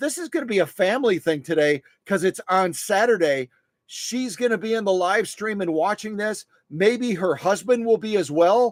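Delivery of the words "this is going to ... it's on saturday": usual speaking voice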